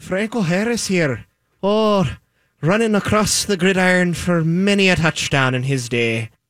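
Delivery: put-on Irish brogue. Answering a request to imagine a football player talking: put-on irish accent. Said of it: "Could you imagine it with an Irish accent?".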